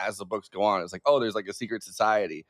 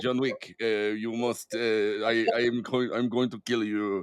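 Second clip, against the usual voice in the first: put-on Israeli accent. Pitching an imagined movie scene, the speaker does Cillian Murphy with an Israeli accent. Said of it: "they give him an Israeli accent and he's like".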